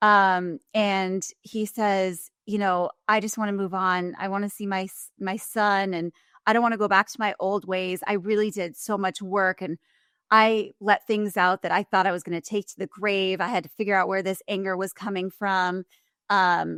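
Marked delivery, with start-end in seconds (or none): none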